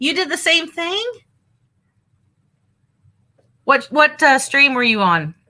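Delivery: speaking loudly. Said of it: "I hope I'm not yelling".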